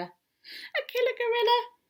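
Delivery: tiny, very high, squeaky mouse voice. Reading a children's story aloud, voicing the mouse's squeaked reply to Koala. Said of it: "she squeaked".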